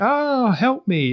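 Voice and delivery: very high, squeaky video game extra voice. Imitating a game character standing there asking for help: imitating a video game NPC. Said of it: "sounds like an N P C from a video game".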